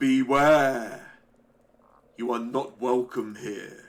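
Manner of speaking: big, loud, booming voice. Storyteller voicing an unseen voice that speaks out, in a really deep voice. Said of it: "a really deep voice speaks out".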